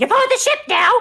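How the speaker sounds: squeaky, very high, loud goblin voice. Voicing a goblin on the ship to the players: goblin voice. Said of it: "the goblin kinda goes".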